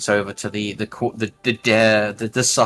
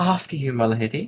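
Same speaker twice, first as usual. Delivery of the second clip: mockingly courteous, theatrical, sarcastic courtly politeness; 4 semitones higher than usual. Narrating a scene, voicing a character who bows as the player steps out, mocking. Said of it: "mockingly bow, and says".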